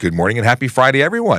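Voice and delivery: ordinary talk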